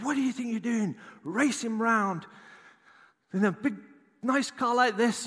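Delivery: very high-pitched, fuming, furious screaming. Retelling a young man who jumped in front of his car, imitating his screaming. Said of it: "And he starts screaming".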